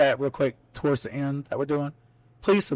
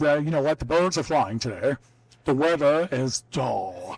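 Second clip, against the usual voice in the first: mock radio announcer voice delivery. Mocking a podcast host who acted like he was on radio, imitating a radio announcer voice. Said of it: "so he talked like this the whole time".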